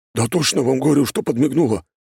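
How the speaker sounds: seriously worked-up, agitated, high-pitched, insistent. Antipkin speaks to the others beside a marble statue, seriously agitated. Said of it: "Антипкин не на шутку взволновался".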